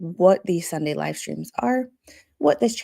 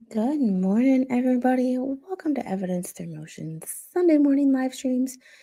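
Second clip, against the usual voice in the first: soft, high ASMR-style voice; 6 semitones higher than usual. Host greeting everybody at the start of a sunday morning live stream, asmr voice. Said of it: "you are getting my A S M R voice today".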